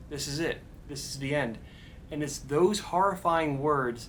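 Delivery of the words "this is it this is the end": ordinary talk, nothing marked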